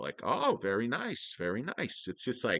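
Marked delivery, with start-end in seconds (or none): 0.2-2.1 play-acted, slow, swooping, subtly belittling condescension. Imitating people from New England belittling a buyer: imitating a subtly belittling New England tone. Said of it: "how people from New England can belittle you with very subtle, uh, changes in their voice".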